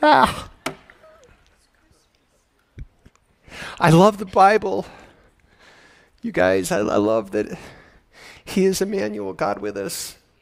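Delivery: emotional, full of feeling, deeply moved, overcome. A speaker telling an audience what they love about the Bible, emotional. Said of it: "I'm so emotional today".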